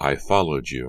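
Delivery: ordinary delivery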